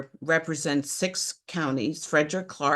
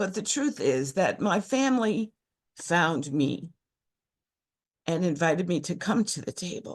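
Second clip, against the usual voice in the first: choked up with emotion, voice catching; 2 semitones higher than usual. Beginning to tell their personal story, choked up. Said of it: "I'm already getting choked up as it is".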